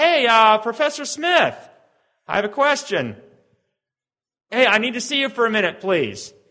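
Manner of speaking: play-acted calling out, projected far. Speaker shows how they call to the professor from the back of the line: calling out. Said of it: "I have to call out".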